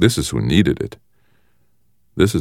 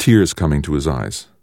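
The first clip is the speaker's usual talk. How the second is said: plain reading voice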